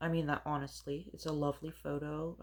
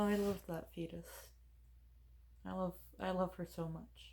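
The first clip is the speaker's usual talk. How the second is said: emotional, moved, much quieter; 4 semitones higher, 4 dB quieter than usual. Speaker talking about her child, getting emotional. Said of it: "I'm getting emotional".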